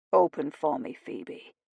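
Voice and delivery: rough, low, gruff voice full of desire. A man speaks to Phoebe in an intimate moment; gruff voice with desire. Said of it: "he said in his gruff voice with desire".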